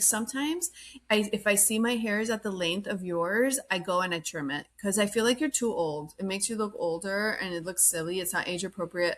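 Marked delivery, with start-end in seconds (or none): none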